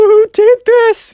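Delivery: mock whimpering, very high pitch, near tears. Retelling how the Minecraft kid reacts in complete shock, in a mock crying, whimpery voice. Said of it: "a kind of like a crying, whimpery voice".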